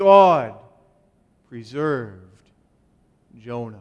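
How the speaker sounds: heavy stress on "God", rest said plainly. Repeating a sentence to emphasize its first word, stress on God. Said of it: "emphasizing the first word".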